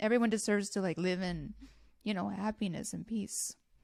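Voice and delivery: choked up, tearful, crying while talking. Discussing a mother's fear for her babies' safety, crying while talking. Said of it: "I'm so crying".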